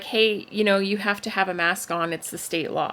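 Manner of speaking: ordinary talk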